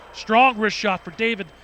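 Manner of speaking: ordinary talk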